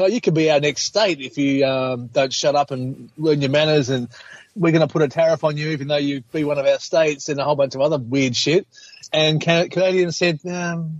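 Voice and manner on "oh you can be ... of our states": ordinary talk, nothing marked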